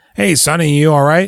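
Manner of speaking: put-on old man voice. Retelling a movie scene where two old men find a man; impression of an old man. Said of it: "Was that a good impression I just did?".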